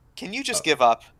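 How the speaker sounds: normal talking voice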